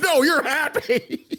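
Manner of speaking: acted very angry. Telling how he said it with the most anger in his voice, imitate someone very angry. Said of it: "the most anger in his voice. Like".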